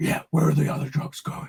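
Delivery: masked vigilante hero character voice.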